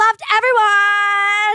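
high, slow, gushing shout. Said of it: "And I was like".

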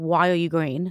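ordinary talk, nothing marked

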